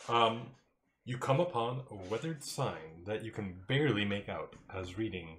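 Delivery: ordinary delivery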